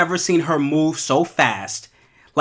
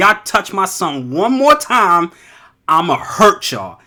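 play-acted, threatening, protective tone; 3 semitones higher than usual. Retelling how mom pointed at people: imitating mom threatening. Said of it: "she's pointing at them like".

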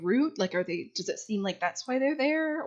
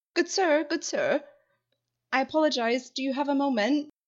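polite, higher-pitched, raised calling voice; 7 semitones higher than usual. In a roleplay, hailing a gentleman walking around the corner of the shop, calling out after him. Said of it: "You might be able to call out for him".

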